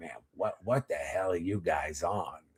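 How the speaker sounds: put-on old smoker's rasp, very deep, low and hushed. Speaker retells getting picked up in the car by a friend's mom, raspy old smoker's voice. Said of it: "old cigarette smoker, raspy drinker's voice".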